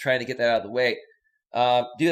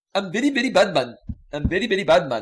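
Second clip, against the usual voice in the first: put-on Indian accent, laid on, high; 6 semitones higher, 3 dB louder than usual. Streamer, at a chat viewer's request, says a phrase in an Indian accent. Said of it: "you would need to say it in an Indian accent".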